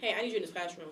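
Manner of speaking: ordinary talk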